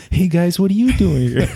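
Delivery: put-on high-pitched little kid voice. Describing walking up to Jason, a speaker quotes him in Jason's kid voice. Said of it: "it's that kid voice".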